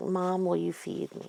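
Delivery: put-on sad pleading tone. Retelling how Ellen asks her mom to feed her, mimicking a sad voice. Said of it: "in this sad voice".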